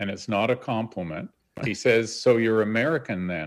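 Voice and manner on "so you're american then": put-on, wry, teasing voice. [name] retelling John turning to him with a dig, imitating John's wry teasing. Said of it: "in his wry digging wit".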